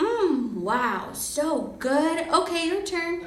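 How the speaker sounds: mock highly animated voice. Retelling how he shoved the pancake into his mouth and spoke, imitating his very animated voice. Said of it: "using his very animated voice".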